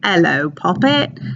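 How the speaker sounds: Cockney accent, h dropped from hello: 'ello. Reading a picture caption aloud to show the accent: cockney accent, dropped h. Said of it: "taking that H off the first word".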